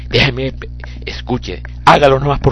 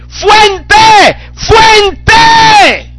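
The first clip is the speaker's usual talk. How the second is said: fuente shouted loud and high-pitched. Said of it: "Es lo que tú vas a gritar".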